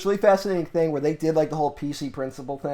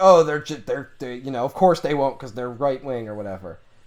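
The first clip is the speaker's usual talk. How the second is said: usual speaking voice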